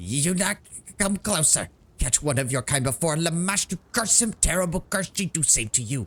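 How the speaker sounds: trembling, quavering, high-pitched goblin howl. The bravest of the goblins steps forth and howls at you: quavering goblin howl. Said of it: "howls at you in a quavering voice".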